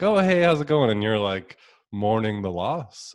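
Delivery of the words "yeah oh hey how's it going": put-on very high, loud, hearty, cheerful voice. Describing a man's jovial greeting to someone who was mourning: mock jovial greeting. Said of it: "He had this jovial sort of like".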